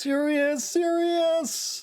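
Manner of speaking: repeated loud shouting. Calling to someone who is resting in bed: shouting loudly over and over. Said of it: "You don't have to shout over and over with that stupidly loud voice".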